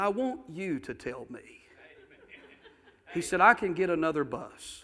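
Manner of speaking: put-on English accent. Retelling what a man said while holding his hand, in an english accent. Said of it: "in that English accent".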